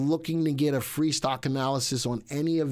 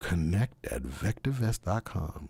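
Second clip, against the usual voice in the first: very deep, slow voice; 7 semitones lower, 3 dB quieter than usual.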